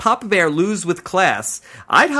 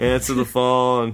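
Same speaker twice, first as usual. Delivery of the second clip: put-on Boston accent, pitched much lower; 6 semitones lower than usual. Speaker records a phone ringtone line, doing the Boston Rob voice. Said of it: "can I have you do the Boston Rob voice".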